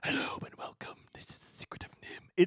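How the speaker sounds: hushed, creepy, breathy ASMR whisper. Describing the opening of The Secret of NIMH, doing the Rat King whisper. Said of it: "talks like in a whisper".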